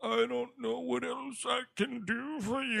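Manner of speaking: terrible, rough, high, creaky voice. Retelling a movie scene, mocking an actor's line: imitating Hamish Linklater's terrible voice. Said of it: "he's doing some fucking terrible voice".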